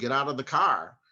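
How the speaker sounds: ordinary talk, nothing marked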